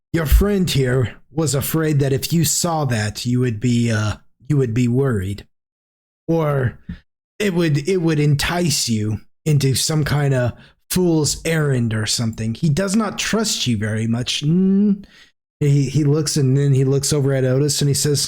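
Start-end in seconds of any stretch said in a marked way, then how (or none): none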